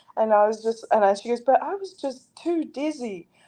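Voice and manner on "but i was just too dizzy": slow, sugary sweet, apologetic voice. Retelling what a tough fighter said to the speaker, imitating a sweet voice. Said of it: "in this sweet voice".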